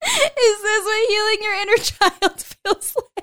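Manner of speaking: very high, loud, teary sobbing voice. While handling her hair, the speaker is crying. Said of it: "Oh my God, I'm crying".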